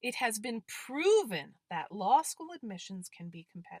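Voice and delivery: proven stressed with rising tune.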